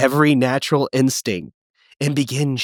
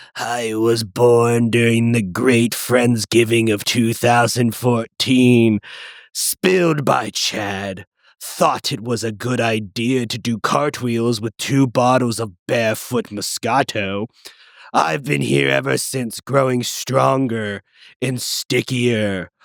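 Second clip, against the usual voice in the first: raspy, rasping creature monster voice; 2 semitones lower than usual. A talking carpet stain introduces itself to a player, in a raspy stain monster voice. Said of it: "speaks in a raspy voice".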